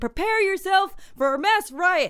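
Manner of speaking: high-pitched, loud shouting. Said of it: "one guy shouting".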